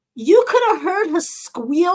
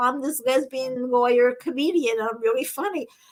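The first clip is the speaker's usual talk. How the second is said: normal talking voice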